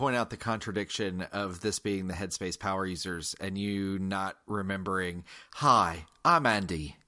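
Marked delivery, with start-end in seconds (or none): 5.5-6.9 poor, bad, put-on British accent. Speaker teases the Headspace power user by imitating the app's intro: bad British accent. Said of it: "I'm sorry for that accent just now".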